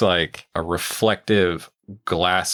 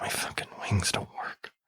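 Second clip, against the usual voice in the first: very quiet, breathy, close whisper; 10 dB quieter than usual. Speaker acts out what he whispers in your ear: acting out a whisper. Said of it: "he whispers in your ear".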